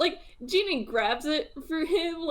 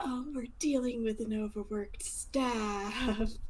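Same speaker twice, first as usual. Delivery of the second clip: hushed half-whisper with the word "staff" stretched out; 3 semitones lower, 7 dB quieter than usual. A character turns to a companion and half-whispers. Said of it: "he just whispers".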